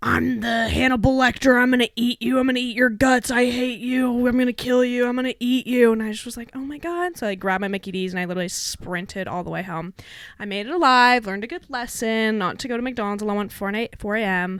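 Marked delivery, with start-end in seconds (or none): 0.0-5.9 man's loud, raging scream. Retelling a man who threatened the speaker near McDonald's, imitating a man screaming. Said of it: "I just hear this man start screaming at me".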